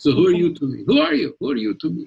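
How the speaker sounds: swooping Eastern European accent, Polish. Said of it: "talked like this, and they're from Poland".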